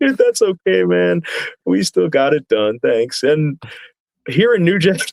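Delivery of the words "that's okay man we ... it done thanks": mock, put-on giggling. Retelling what a wrestler said after an apology: giggling like Doctor Hibbert. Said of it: "he giggles like Doctor Hibbert from The Simpsons".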